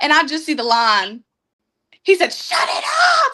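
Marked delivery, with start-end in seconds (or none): 2.3-3.4 very high, mild yell. Retelling how the fiance reacted to the car trouble: imitating someone screaming. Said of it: "he starts screaming at me".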